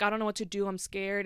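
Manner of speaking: tearful crying voice. Retelling a call to a sister after a car accident: imitating own past crying. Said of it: "crying, like".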